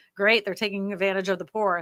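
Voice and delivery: ordinary talk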